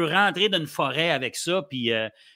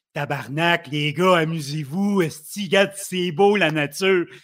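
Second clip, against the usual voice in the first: hefty, big, bearlike backwoods woodsman voice. Asked to imitate a woodsman friend, doing his big bear-like voice. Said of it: "Je l'imite un peu parce que c'est un gars de bois".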